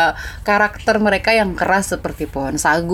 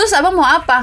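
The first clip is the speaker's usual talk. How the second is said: acted, cheeky, combative, high-pitched, rude snap-back; 10 semitones higher than usual. Retelling a near fight, voice the woman snapping back at Ali: mimicking a rude snap-back. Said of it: "Terus si mbaknya nyolot juga".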